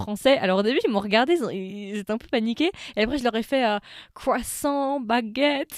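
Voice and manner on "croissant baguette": put-on French words in English accent, pitched up. Retelling talking to visitors who signed an autograph, English accent on French words. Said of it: "l'accent anglais mais français".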